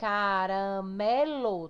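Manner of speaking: caramelo with strongest stress on third syllable me. Portuguese lesson on stressed syllables: caramelo, stress on syllable me. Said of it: "Tá vendo que o mé é mais forte?".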